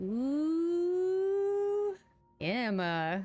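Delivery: very high sing-song teasing, "ooh" drawn out. Voicing a character calling out to Emma: teasing like a little sister. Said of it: "like a little sister teasing".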